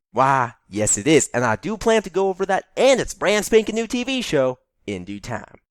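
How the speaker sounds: put-on American southern accent. [name] answers Jerome about Heathers, sounding like a Foghorn Leghorn audition, in a southern accent. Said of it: "can you drop the southern accent?".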